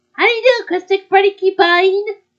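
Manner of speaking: put-on cartoon girl character voice. Playing a restaurant game as a customer, speaking in a Betty Boop voice. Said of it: "you had the high pitch voice".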